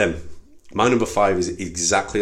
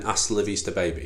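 usual speaking voice

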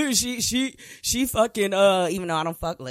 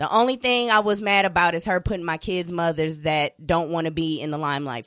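ordinary delivery

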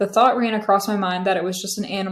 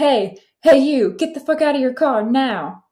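high-pitched screaming; 5 semitones higher, 4 dB louder than usual. Retelling a guy who ran up to the speaker's car, imitating his screaming. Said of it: "starts screaming at me".

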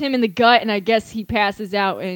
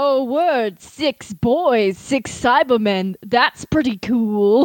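put-on anime character voice. Retelling a scene, acting out Vegeta's line: imitating Vegeta. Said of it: "Vegeta is like".

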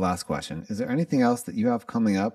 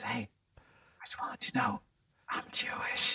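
shy, sheepish, hushed whisper; 8 dB quieter than usual. Retelling what a lady said at a show: imitating a sheepish whisper. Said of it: "she just kinda whispers in my".

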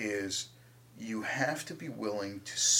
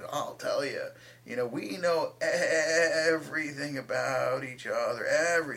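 horribly done, put-on old woman voice; 4 semitones higher, 3 dB louder than usual. Quoting her answer when asked for her wisdom: bad old lady voice. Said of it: "You have a horrible old lady voice".

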